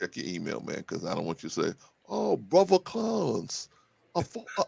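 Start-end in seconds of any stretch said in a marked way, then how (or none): 2.1-4.6 put-on British accent, very high and slow. Urging a friend to check his email, voicing his imagined excuse in a british accent. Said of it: "your British accent is pretty good".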